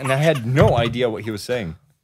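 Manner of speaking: ordinary delivery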